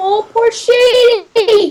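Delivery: squeaky, very high, silly put-on voice. Lamenting shady after the persian immortals arrive, in a put-on voice. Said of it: "And I'm doing the voice again".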